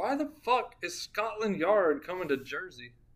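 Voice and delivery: ordinary talk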